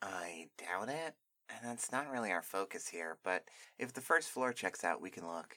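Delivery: put-on bookish, nerdy character voice. Voicing a character planning to explore the first floor, in a nerdy character voice. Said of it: "Okay, [name] seemed like kind of a nerd to me, / Okay, [name] seemed like kind of a nerd to me, so I'm gonna do that. / Okay, [name] seemed like kind of a nerd to me, so I'm gonna do that".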